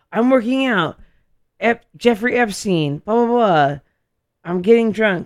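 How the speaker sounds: put-on loud, high, drunken rambling rant. Retelling a documentary scene: imitating drunk Alex Jones. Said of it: "Alex Jones is so drunk".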